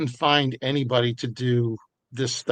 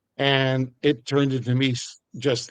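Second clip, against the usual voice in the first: usual speaking voice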